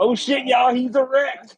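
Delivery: very high, drawn-out holler, as if from far off. Calling to the party from outside the cave: yelling from outside the cave. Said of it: "I just wanna yell from".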